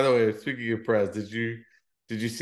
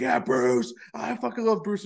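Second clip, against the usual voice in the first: play-acted pumped fighter holler, hyped-up, very high; 9 semitones higher than usual. Retelling how fighters react when introduced: imitating hyped-up fighters. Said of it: "hyped up and banging their chest".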